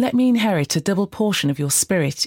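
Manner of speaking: plain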